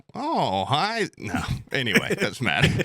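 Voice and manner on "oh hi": very high, squeezed, botched celebrity impression voice. Trying a celebrity impression after admitting nobody could do it: Christopher Walken impression. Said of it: "this is my best one".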